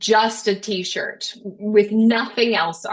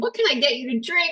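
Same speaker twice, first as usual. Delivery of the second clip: mock cheery, excited, high jovial hostess voice; 5 semitones higher than usual. Retelling mother offering the paramedics drinks: imitating jovial mother. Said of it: "she's jovial".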